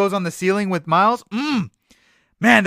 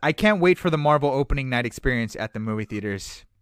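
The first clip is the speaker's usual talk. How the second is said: normal talking voice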